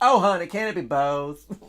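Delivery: put-on flamboyant Florida southern twang. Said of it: "as long as you have uh, a southern twang to it".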